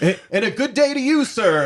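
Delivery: timid, very high yelling call. Telling a story about Walter acting like he's meeting a celebrity, imitating Walter yelling across. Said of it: "like yelling across there".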